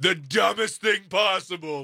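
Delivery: slow, shouted, tough-sounding voice. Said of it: "I'll be like".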